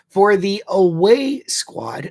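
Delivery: high, slow, throat-clogged false start.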